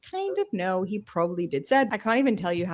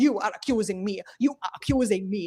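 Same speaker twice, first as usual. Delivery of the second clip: mock angry, defensive man's voice. Retelling how the accused man reacted: imitating an angry defensive man. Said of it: "He's like".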